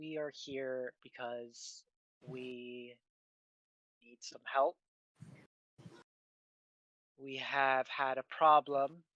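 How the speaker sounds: quiet whispering. Voicing a nervous character leaning close so no one hears: whispering in character. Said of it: "kinda whispers in so that no one else could hear".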